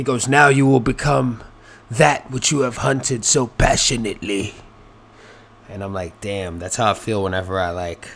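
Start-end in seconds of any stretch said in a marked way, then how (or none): 0.3-4.5 put-on phony British accent, laid on. Retelling what a man with a fake British accent said: fake British, Kelsey Grammer accent. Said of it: "it was like fake British".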